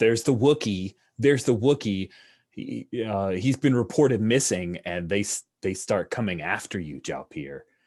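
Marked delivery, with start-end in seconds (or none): none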